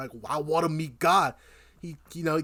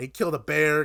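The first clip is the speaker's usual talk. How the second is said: normal talking voice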